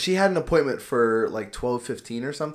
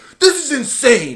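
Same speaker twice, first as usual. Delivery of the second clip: shrill, very high, very loud furious outburst; 11 semitones higher, 10 dB louder than usual. Retelling what an angry family said at the desk, imitating an angry complaint. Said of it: "they're getting so mad".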